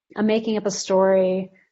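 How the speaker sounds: ordinary delivery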